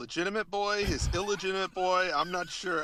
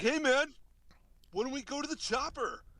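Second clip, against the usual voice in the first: imitated, put-on, very American voice, pitched higher; 9 semitones higher than usual. Imitating the actor son quoting the chopper line: imitating Patrick, very American. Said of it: "Patrick sounds very, very American".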